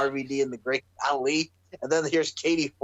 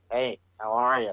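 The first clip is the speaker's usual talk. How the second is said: dull, boring, uninterested tone; 3 semitones lower than usual. Comparing a wrestler to Squidward after getting knocked out: boring Squidward voice. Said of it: "he's friggin' changed and he's all boring".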